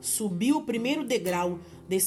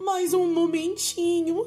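imploring, pleading tone, higher and louder; 8 semitones higher, 5 dB louder than usual. The condemned woman answering a shouted demand to come down, begging. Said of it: "implorou a condenada".

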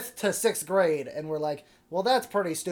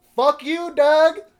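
all-out yell, very loud, high and shrill; 10 semitones higher, 8 dB louder than usual. Retelling a school ceremony where everybody yelled at a classmate: imitating everybody yelling. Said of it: "literally everybody just kept yelling".

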